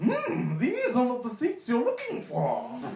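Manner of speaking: bad, very high, swooping, sing-song alien voice. Mocking someone on a train's Jedi mind trick about reserved seats, in a terrible Yoda impression. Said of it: "Apologies for the terrible Yoda impression".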